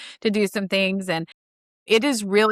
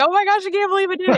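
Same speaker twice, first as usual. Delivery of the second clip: put-on ecstatic shrieking scream, very high, fast; 12 semitones higher, 3 dB louder than usual. Retelling finishing a big task in minutes: retelling own excited scream. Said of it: "just screaming".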